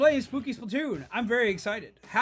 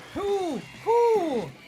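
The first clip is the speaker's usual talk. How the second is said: high, owl-like hooting "who"; 9 semitones higher than usual. Speaker asking who raided them on a broom, hooting like an owl. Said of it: "I'm sounding like an owl now".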